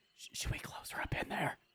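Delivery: soft, hushed whispered aside. In a game, a player's character whispers a question to a companion: whispering. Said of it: "I'm gonna try to whisper to Kaylin".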